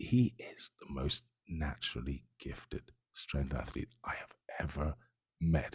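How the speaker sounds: very quiet hushed whisper, barely voiced at all. Describing a strength athlete, whispering. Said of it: "I don't know why I'm whispering it".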